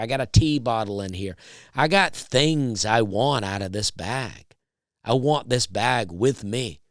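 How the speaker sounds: usual speaking voice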